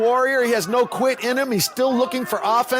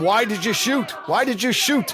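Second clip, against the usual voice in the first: normal talking voice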